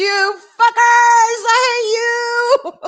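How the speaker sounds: play-acted, very high, slow, drawn-out sobbing wail. Retelling own words while crying in a seat: imitating own crying. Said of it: "I'm sitting here crying in my seat going".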